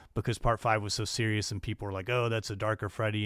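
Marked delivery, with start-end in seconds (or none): none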